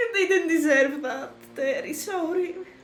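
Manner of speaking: tearful, laughing through tears. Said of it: "Sorry for crying".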